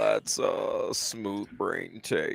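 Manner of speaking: mock vocal fry. Mimicking another speaker's rebuttal back at them in mocking vocal fry. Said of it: "vocal fry the shit out of me".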